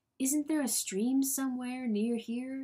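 whispering. A man asks the person with him a question, whispered. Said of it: "he whispered".

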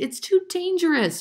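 protesting, objecting tone, voice very high. A mother throws up her hands and objects to the plan, protesting. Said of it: "she protested".

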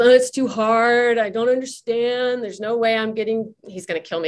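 deliberately poor, defeated, grumbling voice. Recounting Luke's reaction to a low test score, bad impression of Luke grumbling. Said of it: "This is a bad impersonation, but he had grumbled".

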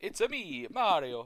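put-on Italian cartoon voice. Talking about everyone's best impression, the speaker does a Mario impression. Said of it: "Doing my Mario".

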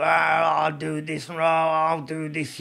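slow, guttural voice like a possessed woman. Retelling a woman said to be possessed: guttural possessed voice. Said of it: "she's got this kind of guttural".

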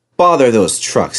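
ordinary delivery

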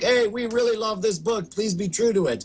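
eager, high, clamoring, pleading voices. Imitating fans begging a filmmaker to stay faithful: imitating clamoring fans. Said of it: "you had fans clamoring like".

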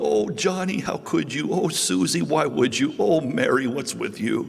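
tearful, weeping, sobbing, mournful voice. Acting out a worried parent lamenting over their kids: imitating a weeping, sobbing parent. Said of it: "you're just weeping and sobbing".

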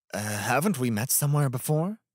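awkward, embarrassed, self-conscious. A man addresses Reiko, sounding embarrassed. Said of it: "It embarrassed him as he said it".

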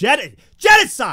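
very loud, high, full-on yell. A streamer during a game, yelling. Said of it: "I'm yelling".

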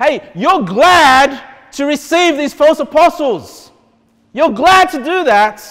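slow, loud sarcasm. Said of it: "the sarcasm of Paul".

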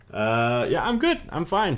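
excited delivery, pitched way up, high and loud.

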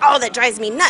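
normal talking voice

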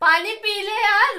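loud shouting mixed with laughter.

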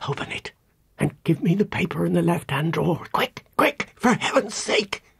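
hurried breathless whisper. A woman in a story speaks to a man as another woman protests, quick breathless whisper. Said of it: "in a quick, breathless whisper".

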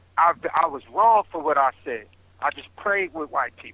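ordinary talk

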